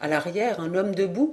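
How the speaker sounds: ordinary delivery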